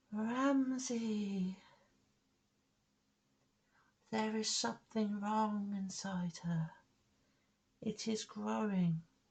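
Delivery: very high, soft ghostly woman's voice. The narrator voices a woman's ghost guiding the listener, in a ghostly woman's voice. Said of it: "the ghostly voice of the woman".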